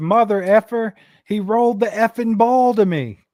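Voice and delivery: acted, raging, high, drawn-out furious scream. Retelling what one player screamed at another: imitating someone screaming. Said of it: "he's screaming at Rashee Rice".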